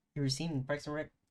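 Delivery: ordinary talk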